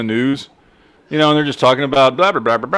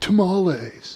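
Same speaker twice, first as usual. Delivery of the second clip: put-on surfer voice, higher and quieter; 5 semitones higher, 6 dB quieter than usual. Imitating how some people say tamales: imitating a surfer dude. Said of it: "say tamales like a fucking surfer dude".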